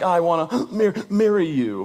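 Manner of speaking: very slow, tearful, broken stammer between sighs. Retelling a girlfriend's tearful proposal at the airport: imitating someone crying. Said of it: "between her heavy sighs and cries".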